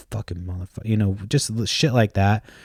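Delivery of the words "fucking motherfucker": quieter muttered curse under the breath. Retelling walking away from a heated talk: imitating himself muttering under his breath. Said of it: "I say some shit under my breath".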